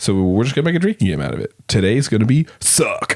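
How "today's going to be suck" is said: on-air radio host announcer delivery. Podcast host opens the episode: radio announcer voice. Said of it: "That was a real radio voice there".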